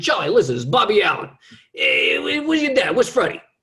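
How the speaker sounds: very high, loud voice. Imitating a friend of a dad calling on the phone: imitating Bobby Allen. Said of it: "those are the guys I would talk to".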